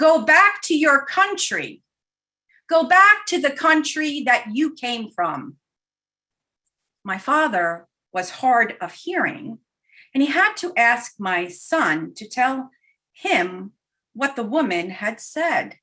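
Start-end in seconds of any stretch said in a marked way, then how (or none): 0.0-5.6 mock hostile, loud, irate, high-pitched outburst. Retelling what a woman said after spinning around, in a put-on loud irate voice. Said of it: "the woman with the loud, irate voice".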